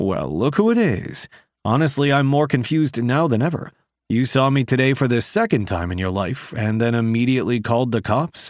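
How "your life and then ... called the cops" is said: ordinary delivery, nothing marked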